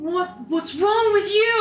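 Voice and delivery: aggressive confrontational voice. Voicing a character who bumps into a player: aggressive, in your face. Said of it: "gets kinda in your face and aggressive".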